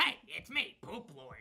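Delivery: put-on troll character voice. Recalling a troll character they once played, redoing the Poop Lord troll voice. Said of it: "poop troll voice?".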